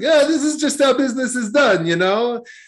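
very high, badly done put-on Italian accent. Retelling a man's reply during a negotiation, in his Italian accent. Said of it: "in his Italian accent which I'll screw up".

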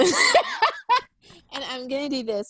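slow, laughing delivery.

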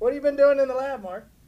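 high, loud, chipper burst of energy. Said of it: "Marty is high off life".

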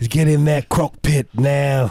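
put-on high, slow Australian accent. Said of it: "your Australian accent is".

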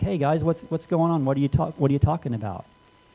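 casual, put-on clueless and innocent tone. Retelling how Jesus plays dumb with two followers: imitating Jesus playing dumb. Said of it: "he also plays dumb".

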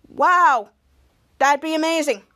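mock heavy sarcasm, slow drawl, plainly unimpressed. Retelling how one character answered another's news, retelling a sarcastic remark.

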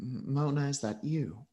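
soft character voice. Narrator voicing Chain answering a call from Mona, Chain's soft voice. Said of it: "You hear his soft voice on the other end of the wrench say".

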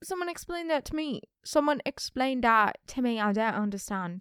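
put-on British accent. Retelling a camp talent show reaction, in a put-on British accent. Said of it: "I don't know what accent this is".

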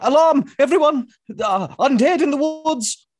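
very high, loud, alarmed yelled call. Raising the alarm in character about undead nearby: yelling an alarm. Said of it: "I love yelling the word alarm".

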